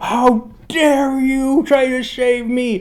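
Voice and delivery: shrill, very high, slowly stretched outraged shout. Recapping a show scene where Husk yells at his rescuer: imitating Husk yelling. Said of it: "Husk yells at him".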